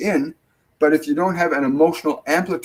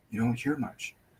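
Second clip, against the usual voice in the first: barely audible, very soft, lowered voice; 3 semitones lower, 12 dB quieter than usual. Speaker demonstrating a low-intensity voice to listeners, lowered quiet voice. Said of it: "if I lower my voice down".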